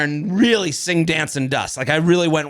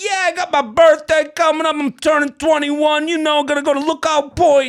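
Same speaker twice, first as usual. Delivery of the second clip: put-on Italian American-accented speech; 11 semitones higher, 3 dB louder than usual. Retelling a kid's reply during a commercial break: imitating Italian-American shtick. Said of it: "He's doing the whole Italian shtick".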